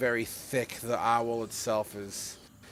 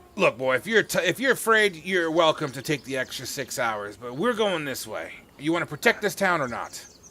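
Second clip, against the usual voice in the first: gruff, raspy, raised voice; 4 semitones higher, 5 dB louder than usual. Voicing a guide who answers a player's question: gruff raspy smoke-lunged voice. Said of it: "in his gruff, you know, gruff and, and raspy, smoke-lunged voice".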